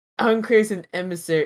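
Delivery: showy, grand presenter announcement voice. Retelling how another speaker presented a campaign name: imitating a grand card-holding announcement. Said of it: "presented this like a guy holding a card who's like".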